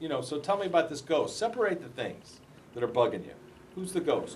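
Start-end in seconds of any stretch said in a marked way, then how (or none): none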